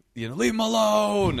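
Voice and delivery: very high, piercing, shrill, loud scream. Telling how somebody else took their side, retelling someone screaming. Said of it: "somebody else started screaming".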